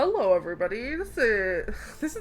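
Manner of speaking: airline captain voice over an intercom. Announcing over the intercom to everybody, in a captain voice. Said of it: "that's just a captain voice".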